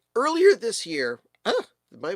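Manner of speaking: voice breaks mid-phrase, cracking and halting. Host on a live stream, mid-sentence, voice cracking. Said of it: "did my voice just crack?".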